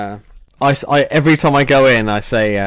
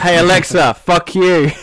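acted-out raised shout, pitched up; 7 semitones higher than usual. Retelling shouting up from the living room at alexa, retelling a shout. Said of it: "I shouted up from the living room like".

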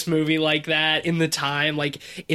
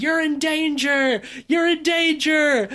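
acted-out put-on scream, much higher-pitched; 12 semitones higher, 3 dB louder than usual. Describing a film's protagonist on the highway, imitating the protagonist screaming. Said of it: "he's screaming".

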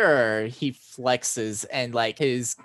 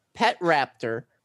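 ordinary talk

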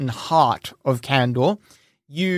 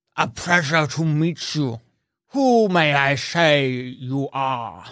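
orc voice, words pushed past giant tusks. Voicing an orc greeting a stranger: orc talking through tusks. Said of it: "he talks through the tusks".

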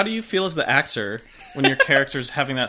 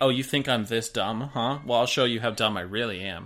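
put-on sarcastic tone, lower; 3 semitones lower than usual. Acting out a show character's reply to people who think she's dumb, imitating her sarcastic reply. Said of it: "She's sarcastically like".

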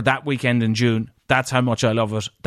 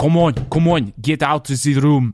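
bad, fake, put-on French accent; 3 semitones higher than usual. Hurrying someone out at checkout time, in a bad fake French accent. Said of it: "So let's do French".

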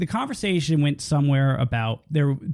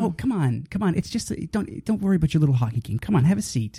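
mocking, put-on condescending tone. Retelling a woman's remarks to the speaker, mocking her condescending tone. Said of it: "she was being condescending".

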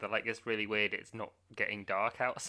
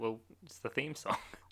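mimicked deadpan delivery, quieter; 7 dB quieter than usual. Retelling characters in a film answering a question, imitating deadpan delivery. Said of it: "Just the most deadpan delivery of everything".

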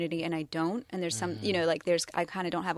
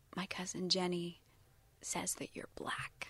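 put-on whisper, much quieter; 11 dB quieter than usual. Retelling what a step cousin whispered to them while playing, retelling a whisper. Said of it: "kind of whispered to me".

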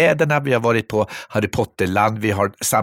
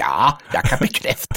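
put-on ten-year-old voice sounding old beyond his years, know-it-all; 2 semitones higher than usual. Retelling how a woman's ten-year-old son nodded along and confirmed: imitating a precocious child. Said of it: "lillgammal och säga".

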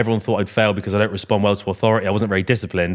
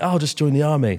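flustered, panicked, pitched-up blurt; 6 semitones higher than usual. Retelling own answer to mum asking about life plans: imitating own past panic. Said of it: "And me in a panic".

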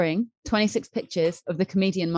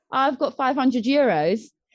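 play-acted, shouted-out call; 7 semitones higher than usual. Retelling a wrestler calling out a bid at an auction: imitating someone shouting. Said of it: "he just shouts out".

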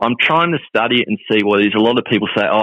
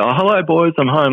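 put-on Dutch accent, pitched up; 6 semitones higher than usual. Speaker imitates a dad in heavy work boots arriving home: put-on Dutch accent. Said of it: "Like he's Dutch, he had an accent".

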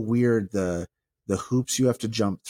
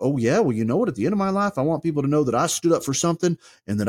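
put-on American Southern accent, pitched up; 7 semitones higher, 3 dB louder than usual. Mocking a type of person while talking it over, in a mock southern accent. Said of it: "give it a Southern accent".

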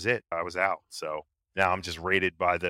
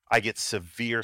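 ordinary delivery

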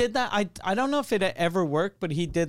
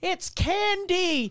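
very high, very slow mocking girly whine. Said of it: "some dumb bitch going".

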